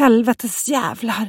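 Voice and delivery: high, mild shrieked exclamation. Olle, after jumping down into the boat, calls to the others: screamed. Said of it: "skrek Olle".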